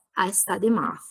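pitch drops away on math. English intonation lesson, answering a question, pitch falls on math. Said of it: "La sentite che scende?".

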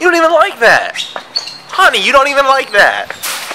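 high-pitched exasperation.

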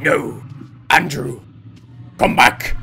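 very loud, slow, angry monster voice. Player wandering away, imagining the game's voice calling him back: mock-angry monster voice. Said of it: "the angry monster voice".

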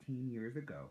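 ordinary delivery

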